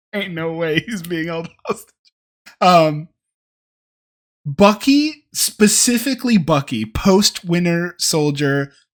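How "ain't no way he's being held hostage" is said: laughing through words while talking. Talking about a character becoming a congressman, laughing while talking. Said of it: "I'm just laughing".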